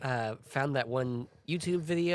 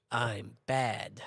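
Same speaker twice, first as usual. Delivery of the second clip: put-on dry villain voice, lower; 3 semitones lower than usual. Mocking the remake's voice for Albert Wesker: dry bad-dub Albert Wesker voice. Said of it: "got a YouTube edgelord to do his voice".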